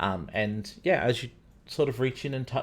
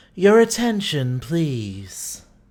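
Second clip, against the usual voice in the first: rich, full, calming, soothing, very loud voice; 5 semitones higher, 8 dB louder than usual. Narrating, voicing the hall's glowing energy addressing the scholars, in a rich, soothing voice. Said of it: "Says a rich and soothing voice".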